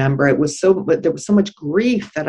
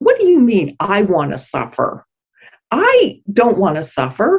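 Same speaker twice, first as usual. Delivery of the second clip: put-on angry voice, pitched higher; 6 semitones higher than usual. Retelling own reply to a guide: retelling an angry reply. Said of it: "I was so angry".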